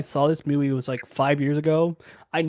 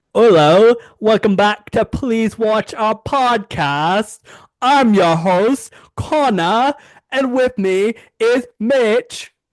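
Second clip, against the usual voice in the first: attempted British accent, very slow, pitched up; 6 semitones higher, 5 dB louder than usual. A podcast host welcomes listeners and introduces his co-host, in an attempted british accent. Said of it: "That was my best British attempt".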